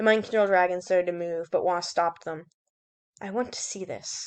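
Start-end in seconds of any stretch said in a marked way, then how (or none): 3.2-4.3 soft, very hushed, barely voiced whisper. Wasp, stopping the mind control dragon, speaks in a whisper. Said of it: "she whispered".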